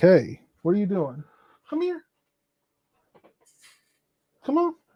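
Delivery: cat voice. Voicing the cat that is not getting enough attention: voicing the cat. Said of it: "So she's like".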